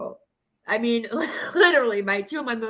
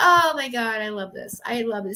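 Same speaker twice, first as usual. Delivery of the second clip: happy tears in the voice. Speaking to YouTube viewers after crying in a bad way, now crying happily. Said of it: "I'm crying in a happy way now".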